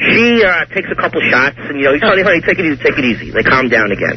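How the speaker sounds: plain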